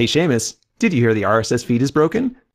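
ordinary talk, nothing marked

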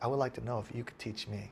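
very quiet, soft, hushed voice. Retelling a rival's request to be taught: imitating someone speaking quietly. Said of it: "He said it quietly".

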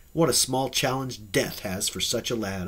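ordinary talk

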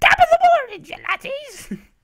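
very loud, very high scream. Imitating a loud video intro: Jacksepticeye screaming intro. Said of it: "Jacksepticeye is screaming at the top of his lungs".

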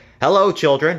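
speaking sweetly. Reading a story aloud, someone greets the children in a sweet voice. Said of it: "someone said in a sweet voice".

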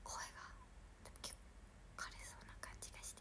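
quick whispered delivery.

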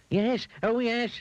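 crying out in panic. A mean man whose nose became a carrot answers the washerwoman, crying out in panic. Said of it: "he cried in a panic".

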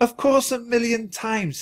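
very high, words spoken through laughter. [name] answers Jack, laughing.

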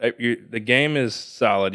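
ordinary talk, nothing marked

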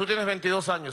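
ordinary talk

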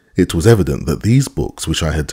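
plain reading voice

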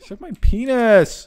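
complaining, whining, whiny delivery. Firing back during a bickering exchange between speakers, whiny. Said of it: "That sounded really whiny".

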